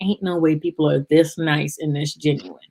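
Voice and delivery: ordinary talk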